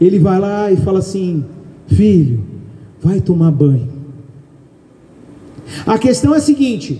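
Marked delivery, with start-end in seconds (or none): 1.9-3.9 put-on soft, gentle voice, much lower. Speaker contrasts a shouting mother with the Holy Spirit's way of speaking, imitating a soft, gentle voice. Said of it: "fala num tom mais baixo, brando".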